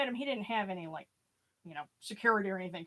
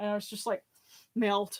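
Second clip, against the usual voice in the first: usual speaking voice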